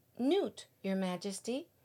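ordinary delivery, nothing marked

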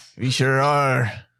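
put-on old sea-dog pirate voice. Replying to friends joking about australian accents, pirate voice. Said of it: "You sound like a pirate".

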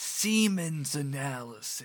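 soft, hushed half-whisper under the breath. Retelling a scene where a caller must half-whisper on the phone: imitating someone half-whispering. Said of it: "he has to whisper".

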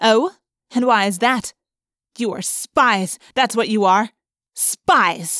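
scornful, sneering, suspicious, accusing tone. Narrator reading a woman's reply after being told a name is not her concern, sneering. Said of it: "The woman stopped. She came back toward us. "What did you say?" she demanded. / The woman stopped. / The woman sneered. / A human controller brushed past us".

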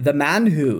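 terrible fake Scottish accent. Naming tonight's album in a terrible Scottish accent. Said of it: "That is a terrible Scottish accent".

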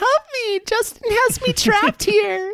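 high, squeaky game-master voice.

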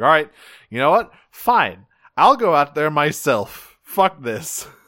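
put-on screaming outburst, carrying on. Retelling a cartoon scene where Megatron yells and carries on: imitating Megatron yelling. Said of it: "he's just yelling and screaming and carrying on".

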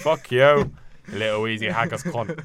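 put-on, fake Scottish accent. Repeating an insult after being told it sounded scottish: put-on scottish accent.

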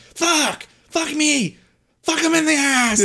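play-acted very high, stretched-out shrieking screams. Describing how players get mad in old Halo and Gears of War days, imitating a screaming gamer. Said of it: "you're just screaming these".

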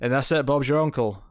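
ordinary delivery

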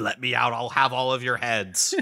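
mock nasty, hostile, angry and mean voice. Retelling a scene from the show, imitating an angry, mean guy. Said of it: "this guy is like angry and mean".

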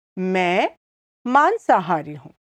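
slow, deliberate, drawn-out Hindi phrasing. Teaching a hindi phrase and saying it a second time, slowly. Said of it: "I'll say it again slowly".

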